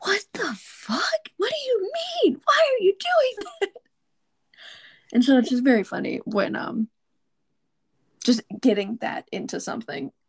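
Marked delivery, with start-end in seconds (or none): 0.0-3.7 acted-out shrill, very high, climbing yell. Describing a video of two people on different couches: retelling two people yelling. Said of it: "just like yelling".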